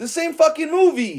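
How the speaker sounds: loud, very high, shrill yell. Realizing a plot matches another Batman movie, yelling. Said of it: "I'm sorry to yell at y'all".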